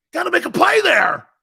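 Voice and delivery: loud, high, angry screaming. Retelling how a coach screamed at the players: imitating Buddy Ryan screaming. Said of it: "And he's screaming at us".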